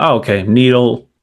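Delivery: ordinary delivery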